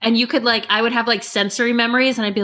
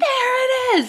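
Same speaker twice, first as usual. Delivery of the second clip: aggressive, shrill, very high-pitched yell. Retelling how the kids react on finding a hidden Mickey: imitating kids yelling aggressively. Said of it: "we yell really aggressively when we find them".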